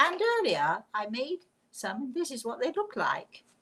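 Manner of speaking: sing-song, put-on British cooking-show presenter voice. Imitating a professional chef on the telly: british accent. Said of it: "my totally British accent comes out".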